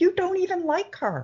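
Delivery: shrill screaming, voice shooting very high. Retelling what she screamed at a boy: imitating someone screaming. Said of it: "And I'm screaming at him".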